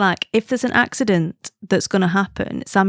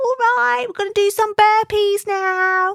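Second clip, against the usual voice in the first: affected mock Cockney accent; 13 semitones higher than usual. Worried your kids will pick up his accent from watching too much, imitate it: put-on Mockney accent. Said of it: "this like Mockney accent".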